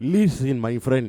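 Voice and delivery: Middle Eastern-accented speech. Trying the accent after being asked to: attempted Middle Eastern accent. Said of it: "Do it".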